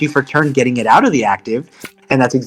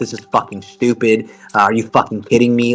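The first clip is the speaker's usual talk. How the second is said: mock-furious, angry, whispered muttering under the breath; 3 semitones lower than usual. Recounting an opponent cursing in front of the judges, retelling an angry under-breath whisper. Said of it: "was literally whispering under their breath".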